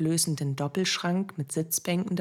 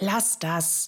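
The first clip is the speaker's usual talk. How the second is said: hissed, hissing voice; 3 semitones higher than usual. Birgit waves the narrator off, hissing. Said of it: "fauchte sie".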